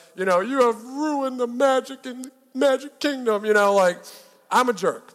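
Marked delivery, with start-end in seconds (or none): 0.4-3.5 hurt, high, teary, tearful reproach. Retelling what a wife said while walking away: imitating a wife's tearful reproach. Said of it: "walking away with tears in her eyes".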